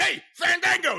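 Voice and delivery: yelling voice. Retelling a wrestler on the mic yelling at fandango: imitating someone yelling. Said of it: "They're yelling at Fandango".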